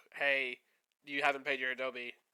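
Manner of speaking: normal talking voice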